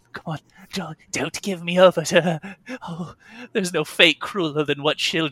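frightened, terrified whimpering in a pleading tone. Voicing a captive being rowed to a captain: acting whimpering and terrified. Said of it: "he's whimpering and terrified".

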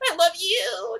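very high, tearful crying voice. With tears in her eyes, a daughter answers her father: teary voice. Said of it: "she gets little tears in her eyes".

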